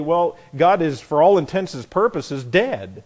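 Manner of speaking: plain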